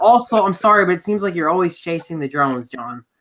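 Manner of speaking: usual speaking voice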